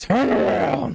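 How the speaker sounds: garbled voice breaking up through static. In a game, the narrator voices something heard through static: distorted voice. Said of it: "Sounded like you distorted out for a moment".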